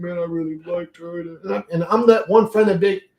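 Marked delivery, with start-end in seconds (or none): 0.0-1.2 put-on talking through tears. Retelling a friend's words after being left: imitating Sullivan crying. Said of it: "he'd be crying, you know, like, tearing up".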